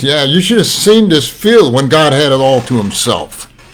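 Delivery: put-on wry, sardonic, sarcastic tone. Telling a story of a farmer's reply, imitating a sarcastic farmer. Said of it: "kind of sarcastically and he says".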